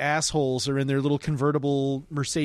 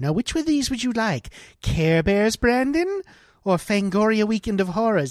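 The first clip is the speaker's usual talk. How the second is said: high, maternal-sounding voice; 7 semitones higher, 4 dB louder than usual. At the video store, a mother asks her son which movie he wants, imitating Brandon's mom. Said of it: "this is what Brandon's mom sounded like".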